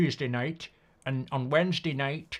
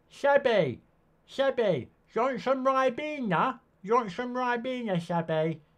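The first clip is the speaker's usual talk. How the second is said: put-on very high, squeaky, childish, childlike voice; 10 semitones higher than usual. Speaker does the voice he uses to tease Seb; Teletubby voice. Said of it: "meant to be like a Teletubby".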